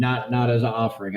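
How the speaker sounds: ordinary talk, nothing marked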